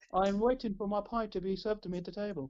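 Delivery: ordinary talk, nothing marked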